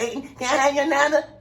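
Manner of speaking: meek, timid, high soprano voice. Speaker acts out a guy approaching a girl, in a high soprano voice. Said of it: "That voice inside you, boy, you a soprano".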